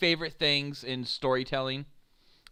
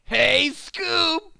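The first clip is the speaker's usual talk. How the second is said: very high, loud, whiny nerd voice. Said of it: "after that obnoxious voice".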